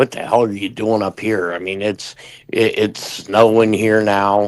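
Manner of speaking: normal talking voice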